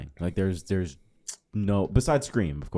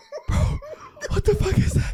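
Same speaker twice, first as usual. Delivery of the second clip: very high, loud, frightened blurt; 5 dB louder than usual. Acting out hiding in a closet during a horror movie: acting scared. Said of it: "I'm so scared".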